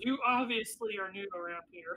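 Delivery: ordinary delivery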